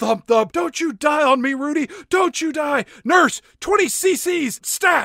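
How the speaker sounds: screaming, very high pitch. Recapping the movie Outbreak, a reviewer acts out a doctor, imitating a doctor screaming. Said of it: "this doctor is just screaming".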